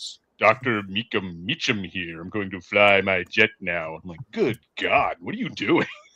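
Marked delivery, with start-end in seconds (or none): 0.0-3.9 deep, low radio broadcaster voice. Describing a character's surprisingly deep radio voice; deep Doctor Meacham voice. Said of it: "his m- voice was so deep".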